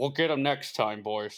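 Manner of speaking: loudspeaker-style announcement like a megaphone broadcast. Joking about a heist during a coronation, a mock Price megaphone announcement. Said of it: "over the loudspeakers in every British street".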